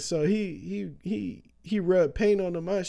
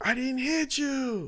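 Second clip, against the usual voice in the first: mock very slow, high shout, every word stretched; 7 semitones higher than usual. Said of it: "you gotta stop yelling at me".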